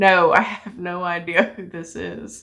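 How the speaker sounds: put-on, obviously sarcastic, slow, facetious tone. Retelling a reply to dad about a cousin: retelling a sarcastic reply. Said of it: "I'm being facetious".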